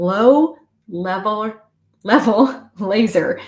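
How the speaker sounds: very slow, careful, deliberate word-by-word reading. Reading aloud a term often stumbled over: reading very carefully. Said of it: "so I'm gonna read it very carefully".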